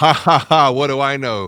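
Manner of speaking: very loud, high, acted laugh at oneself. Retelling a reply to an advisor's suggestion: imitating own past laughing. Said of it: "I remembered vividly laughing".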